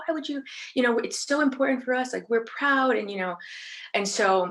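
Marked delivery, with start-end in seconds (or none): 0.0-3.0 acted, deeply upset and heated tone. Retelling his reaction on learning who took the flag down: imitating someone upset. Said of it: "he gets so upset".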